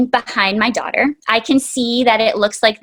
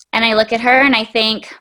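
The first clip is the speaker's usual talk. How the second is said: ordinary delivery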